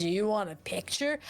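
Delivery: put-on drunk-sounding voice. Retelling how Buff offered a picture at a party: imitating Buff sounding drunk. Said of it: "Why did you make Buff sound like they were drunk?".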